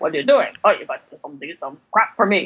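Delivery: low Borscht Belt comedian patter voice. Imitating the game character who takes your fragments, in a Borscht Belt voice. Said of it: "he sounds like he's from the Borscht Belt".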